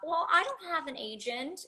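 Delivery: the sweetest, cutest, high, adorable little voice. Retelling answering a talent agent in front of their mom, in the most adorable voice possible. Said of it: "in the most adorable voice I can possibly muster".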